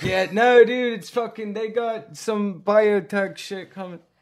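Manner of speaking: wired, agitated voice pitched high. Imagining someone coked up in the bathroom: imitating coked-up Johnny Manziel. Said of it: "he's coked up in the bathroom like".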